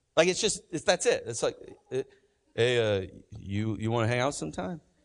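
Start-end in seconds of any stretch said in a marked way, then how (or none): 2.6-4.8 put-on man's voice, much lower. Speaker advising men on asking women out, acting out a guy's invite, Rocky-like man's voice. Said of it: "when I do men voices, I sound like Rocky".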